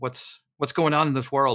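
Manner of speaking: ordinary talk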